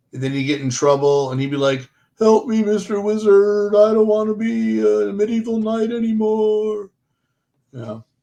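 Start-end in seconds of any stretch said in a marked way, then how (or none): 2.1-6.9 put-on whiny cartoon turtle voice, high. Retelling what a cartoon turtle would say when in trouble: put-on complaining cartoon turtle. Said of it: "Sound like a serious complainer".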